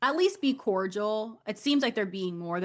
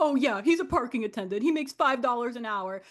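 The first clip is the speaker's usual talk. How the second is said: sarcastic, jokey, played-for-laughs tone; 2 semitones higher than usual. Retelling a reality show scene where Rachel answers Teresa: imitating Rachel being sarcastic. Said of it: "trying to be funny and sarcastic".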